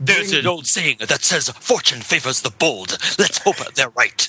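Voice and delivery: put-on voice enunciating every single word heavily. Joking about enunciation, quoting a Deep Space Nine line: Avery Brooks impression. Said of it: "That's my Avery Brooks impression".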